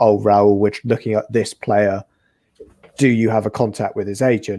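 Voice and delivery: ordinary talk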